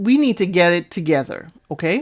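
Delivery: plain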